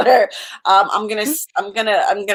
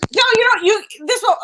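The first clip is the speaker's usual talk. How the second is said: put-on screaming voice, higher; 11 semitones higher than usual. Doing an impression of Chloe, who screams all the time: Chloe impression, screaming. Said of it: "my impression of Chloe".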